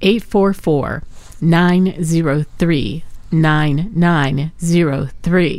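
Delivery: said slowly. Giving the donation phone number to listeners, slow. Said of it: "I'm going to say this slow".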